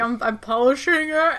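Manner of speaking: put-on voice as if mouth is full. Retelling a scene where Daisy is caught, talking with mouth full. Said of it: "Her mouth is, like, clearly, like, full".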